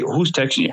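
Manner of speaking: irritated, angry voice. Retelling being woken at twelve thirty by texts: imitating an angry question. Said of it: "from a dead sleep to now I'm getting angry".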